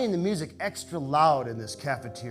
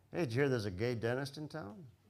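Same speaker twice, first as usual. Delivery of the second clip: put-on sly muttered aside; 9 dB quieter than usual. Retelling a quiet dinner remark: Frank muttering out of the corner of his mouth. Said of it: "just says out of the corner of his mouth".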